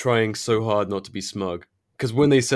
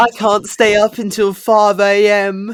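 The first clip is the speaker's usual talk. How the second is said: bad put-on British accent, higher and louder; 11 semitones higher, 9 dB louder than usual. Joking about staying up late: failing at a british accent. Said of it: "failing at putting on a British accent".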